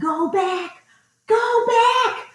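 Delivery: dramatic, shrill yell pitched way up. Retelling a trail outing, re-enacting yelling at a companion coming behind. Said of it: "I'm yelling".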